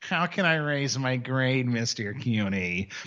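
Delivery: drawn-out, very slow begging student voice. Teacher showing how his students sound when asking to raise grades, imitating students. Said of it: "you all sound like this".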